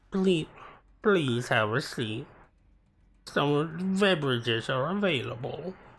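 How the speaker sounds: mopey, hangdog, droopy cartoon dog voice. Mocking a waiting-room announcement voice, doing a Droopy Dog voice. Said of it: "Why did they give it the voice of Droopy Dog?".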